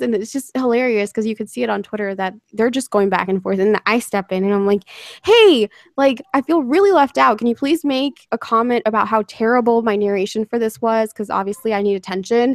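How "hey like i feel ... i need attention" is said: ordinary talk, nothing marked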